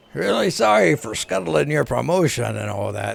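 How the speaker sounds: burly male voice. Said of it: "These burly man voices".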